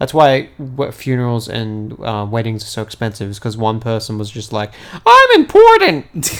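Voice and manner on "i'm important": shrill, very loud, high-pitched shriek. Retelling one person's wedding in a Lincoln impression. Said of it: "that's actually a spot-on Lincoln impression".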